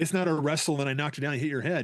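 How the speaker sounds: usual speaking voice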